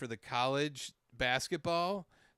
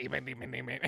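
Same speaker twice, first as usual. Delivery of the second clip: put-on silly, stupid-sounding alien voice. Mocking an actor who played an alien: mocking a stupid alien voice. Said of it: "doing this stupid ass voice".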